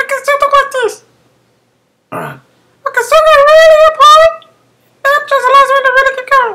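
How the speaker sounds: very high, very loud, pushed voice. Demonstrating how to keep talking up in a really high voice: very high-pitched voice. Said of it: "sorry if you didn't understand that".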